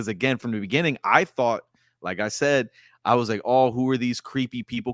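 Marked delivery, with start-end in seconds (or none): none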